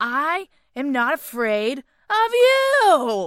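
very loud, slow, odd-word stress, drawn-out "you". Quoting a favorite scene line: Al Pacino impression, stressing odd words. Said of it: "he goes in his typical, like, weird and, like, he, he emphasizes weird words".

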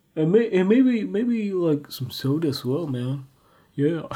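lazy voice with odd timbre.

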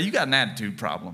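a little lippy, sassy, with a bit of attitude. Telling the congregation what to say to their neighbor: with a little bit of attitude. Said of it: "Say it with a little bit of attitude".

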